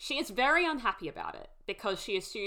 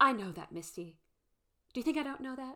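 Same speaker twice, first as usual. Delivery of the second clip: intimidating, belittling put-down delivery; 4 semitones higher than usual. Retelling a scene where Shauna answers Misty: imitating Melanie Lynskey's intimidating delivery. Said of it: "intimidating Melanie Lynskey way that she says it".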